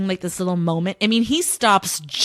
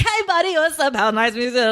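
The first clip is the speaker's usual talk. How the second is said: over-the-top, barreling, energetic delivery with pitch raised; 6 semitones higher than usual. Mocking how Umberto barges in and greets someone: imitating Umberto barreling in. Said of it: "The way he comes barreling in".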